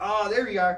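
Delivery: high, loud yelling. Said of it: "And you're yelling".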